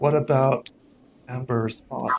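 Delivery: whispering. Voicing a figure who speaks into a player's ear: whispering in your ear. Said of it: "whispers in your ear".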